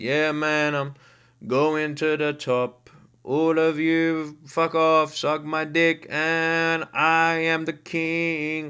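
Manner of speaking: put-on very slow, chill, unbothered, laid-back drawl. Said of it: "he's saying it like this ... Bro was so chill".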